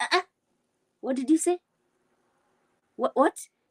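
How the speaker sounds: put-on heavy Kenyan accent. Retelling talking to a doctor after flying in from Kenya, in heavy Kenyan accent. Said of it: "With my heavy accent".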